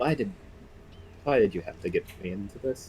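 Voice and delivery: quiet grumbling, muttering under the breath. Voicing a character bundling up in his coat on watch: muttering under his breath. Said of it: "sort of just mutter under his breath".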